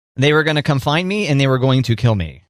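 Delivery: ordinary delivery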